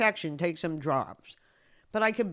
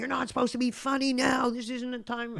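high-pitched put-on yelling; 6 semitones higher than usual. Retelling how he yelled at the speaker for joking, imitating a yell. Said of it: "he started yelling at me".

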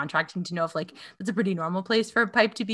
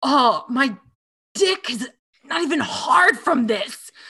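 aggressively masculine, slow, pitched-up macho swagger; 6 semitones higher, 5 dB louder than usual. Describing a man performing toxic masculinity, in a mock aggressively masculine voice. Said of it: "so aggressively masculine".

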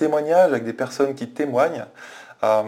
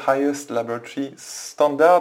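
slow, careful, superb English accent. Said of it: "vous remarquez mon superbe accent anglais".

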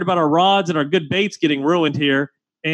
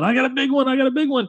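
mock hollered, high-pitched shout; 8 semitones higher than usual. Retelling how Josh yelled about a big fish from his kayak: imitating Josh yelling. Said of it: "Josh is yelling".

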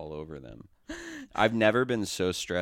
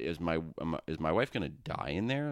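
ordinary delivery

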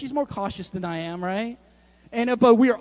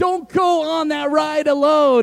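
mock yelling, acted shout; 6 semitones higher, 7 dB louder than usual. Recounting a mom yelling from the back about a ride, retelling a yell. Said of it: "She's like yelling".

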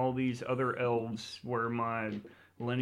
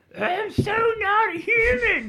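fake beastly female creature scream, higher and louder; 10 dB louder than usual. Voicing the creature's scream after the description: mock bestial lady scream. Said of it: "Just like that".

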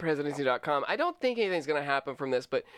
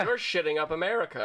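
plain

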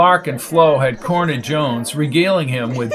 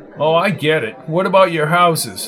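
usual speaking voice

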